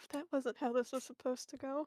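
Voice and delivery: soft mutter under the breath, to oneself. Voicing a confused character reacting to what just happened: muttering under his breath. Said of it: "mutter under his breath".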